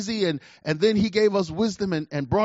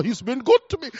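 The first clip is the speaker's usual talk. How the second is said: put-on drawling English accent; 5 semitones higher than usual. Speaker retelling what an English woman said about him: put-on English drawl. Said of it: "She's doing all this with the English drawl".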